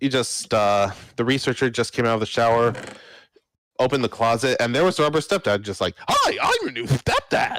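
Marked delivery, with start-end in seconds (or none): 6.1-7.6 very high, wildly swooping, manic voice. Voicing a rubber stepdad greeting a researcher from a closet: Ed Wynn on crack impression. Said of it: "Ed Wynn on crack impression".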